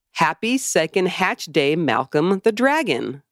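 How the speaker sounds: ordinary delivery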